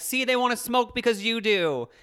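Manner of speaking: mock cross scolding, yelled. Retelling how she always scolded their smoking dad, retelling a yell at dad. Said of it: "so she would always yell at him".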